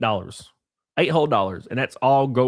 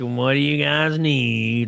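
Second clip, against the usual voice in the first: put-on annoyed old woman voice; 2 semitones higher than usual. Retelling a diner visit, imitating an old annoyed waitress. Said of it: "all, like, old and annoyed".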